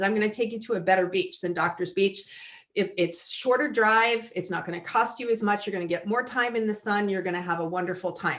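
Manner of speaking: ordinary delivery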